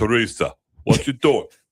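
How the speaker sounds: fake New Jersey accent. Asked by the other speaker to do a New Jersey accent, New Jersey accent. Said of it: "Do a New Jersey accent".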